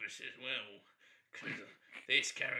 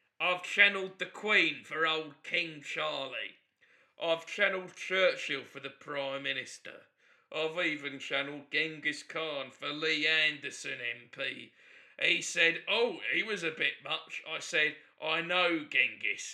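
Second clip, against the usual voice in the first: put-on booming, very loud cockney accent; 3 semitones higher, 8 dB louder than usual. Self-described professional cockney and psychic tells David about his busy week, cockney accent. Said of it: "professional cockney".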